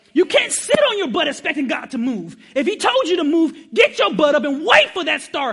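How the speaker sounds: very loud, shrill, high, preacher-like scream. Speaker urges the audience, with kids present, screaming. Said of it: "I'm sorry, all the kids, I'm screaming".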